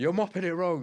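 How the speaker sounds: very high, shrill, high-pitched screaming yell. Retelling army cadets being told off: imitating a screaming instructor. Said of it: "you just get screamed at all the time".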